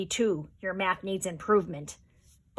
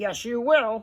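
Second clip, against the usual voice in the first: growling, monster-like voice; 2 semitones higher than usual. Narrator reads a figure answering the narrator's promise to pay later; growled reply. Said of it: "and he growled".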